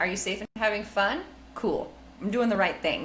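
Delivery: plain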